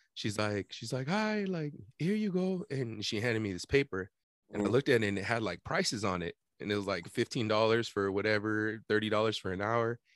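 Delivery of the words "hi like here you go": halting broken English, very high-pitched. Retelling how a lady came up and handed over a paper, imitating broken english. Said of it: "in like broken English".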